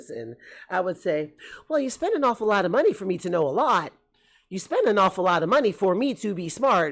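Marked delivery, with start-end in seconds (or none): 1.7-6.9 put-on sassy, know-it-all smart-ass tone. Retelling what they said back to their mother: retelling own smart-ass reply. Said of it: "And with my smart ass".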